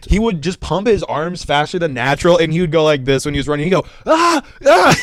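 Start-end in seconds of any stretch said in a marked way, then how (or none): 4.0-4.9 very high, shrill, loud yelping screams, acted out. Retelling how a lazy teammate ran at practice: imitating someone screaming. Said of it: "He'd start screaming".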